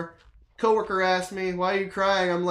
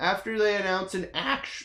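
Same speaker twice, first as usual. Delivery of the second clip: voice breaking, cracking mid-phrase; 3 dB quieter than usual. Talking about defending Nintendo, voice cracking mid-sentence. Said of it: "sorry, voice crack".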